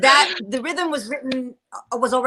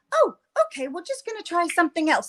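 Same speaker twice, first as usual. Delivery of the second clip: put-on polite voice, pitched higher; 7 semitones higher than usual. Retelling how Kate, the costume designer, reacted at a fitting: imitating Kate's polite tone. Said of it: "she was so polite".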